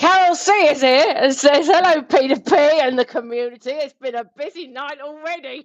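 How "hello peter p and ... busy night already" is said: put-on Cockney-tinged reading voice. Reading out a chat greeting while doing an impression of Boaty: imitating Boaty, sounding Cockney. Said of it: "it's gonna sound Cockney 'cause I can't do your accent".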